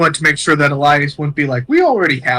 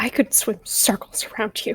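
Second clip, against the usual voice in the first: very slow, hushed, drawn-out whisper; 7 semitones higher, 9 dB quieter than usual. Playing a character who answers another character's boast: whispering. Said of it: "Mariana's just gonna whisper".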